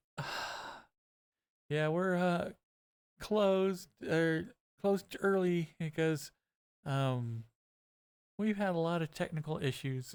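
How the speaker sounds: miserable, exhausted, slow worn-out dragging delivery. Retelling a worker answering customers waiting to order: imitating a miserable, worn-out voice. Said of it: "she sounds like she's just had the worst day of her life".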